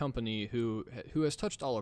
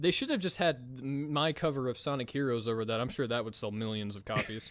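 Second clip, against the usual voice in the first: ordinary talk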